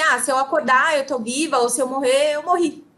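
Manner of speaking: usual speaking voice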